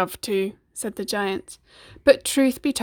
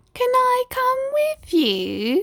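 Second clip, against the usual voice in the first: very high, small, whiny, pleading voice. Reading a story aloud, a small voice from the radio speaks up: whiny small voice. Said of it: "whined a small voice".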